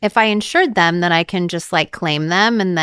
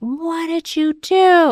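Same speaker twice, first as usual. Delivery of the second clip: mock very high, stretched-out, drawn-out shriek; 11 semitones higher than usual. Retelling how her mom reacted to the shoot: imitating her mom screaming. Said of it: "screaming down the hall".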